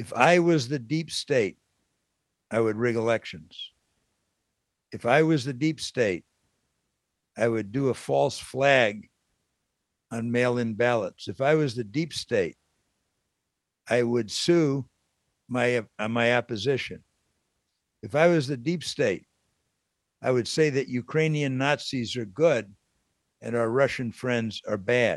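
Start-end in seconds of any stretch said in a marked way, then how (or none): none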